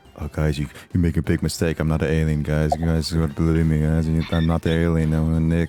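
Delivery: close-mic delivery. Retelling what he said to the group, speaking close to the mic. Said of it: "brought my mic up close and it was like".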